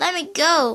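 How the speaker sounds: rasping, choked, strangled voice. Reading a story where a boy is choked from behind: rasping, choked voice. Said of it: "Roy rasped".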